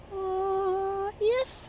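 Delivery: high-pitched, thrilled, excited yes. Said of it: "I'm excited".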